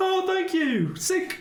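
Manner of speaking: put-on high-pitched kid voice. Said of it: "Your voice dropped in a week".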